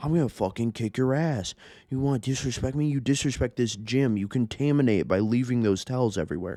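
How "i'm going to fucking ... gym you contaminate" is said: heated, aggressive, threatening rant, spitting curses. Retelling a man at the gym screaming threats: imitating someone screaming. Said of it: "this dude's fucking screaming at me".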